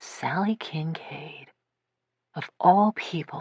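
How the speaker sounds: faraway, slow, distant musing tone. Reading a story where the sister speaks half to herself: distant voice, as if talking to herself. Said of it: "in a distant voice, almost like she's talking to herself".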